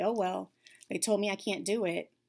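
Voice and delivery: ordinary talk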